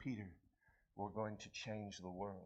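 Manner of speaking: put-on low, quiet, very deep, soft British accent. Retelling a scene where Jesus answers Peter, Jesus with British accent. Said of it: "with this British accent and he says".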